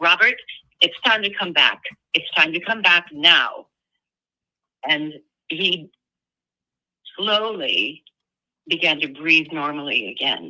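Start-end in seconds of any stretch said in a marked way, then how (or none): 0.0-3.7 mock authoritative, very commanding, loud calling voice. A hypnotist recalls calling a man back from trance, retelling a loud command. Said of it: "say very loudly and in a very commanding tone".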